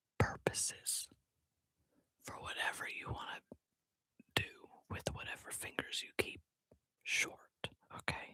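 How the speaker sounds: hushed whisper. Answering a question after saying it will be whispered: whispering. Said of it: "I'm gonna whisper this".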